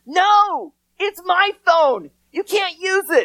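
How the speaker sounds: put-on high, shrill, loud, stretched-out toddler screech. Acting out an inner four-year-old refusing to lend a phone: imitating a screaming four-year-old. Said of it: "my four-year-old was screaming".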